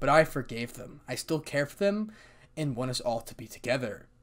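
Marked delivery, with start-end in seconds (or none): none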